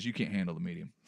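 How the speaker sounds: mock blank, low, flat, expressionless deadpan. Retelling what the worker said to the sister-in-law: imitating a deadpan line. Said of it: "with no expression, the woman just goes".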